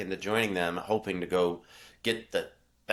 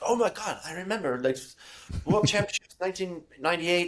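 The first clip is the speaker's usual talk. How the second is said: put-on thick Quebec accent, very high pitched; 10 semitones higher than usual. Retelling a podcast guest's answer to a question about race memories, thick Quebec accent. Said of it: "He's got this thick Quebec accent".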